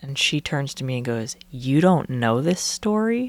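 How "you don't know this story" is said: put-on sassy, knowing, challenging tone. Retelling how a friend asked a question, imitating a sassy question. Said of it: "All sassy".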